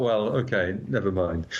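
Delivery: ordinary talk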